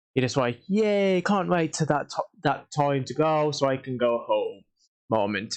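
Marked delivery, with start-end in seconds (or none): none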